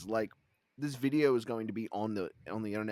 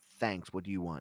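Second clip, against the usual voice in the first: mock curt, blunt tone, lower; 3 semitones lower than usual. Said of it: "not in that tone".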